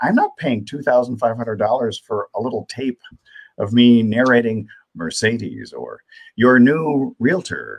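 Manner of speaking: plain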